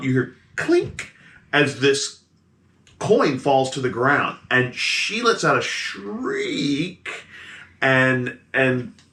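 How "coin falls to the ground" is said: plain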